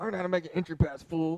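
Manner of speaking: slow mumble, muttered under the breath. Retelling walking away after the St. Peter's game; mumbled under breath. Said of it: "I mumbled it under my breath".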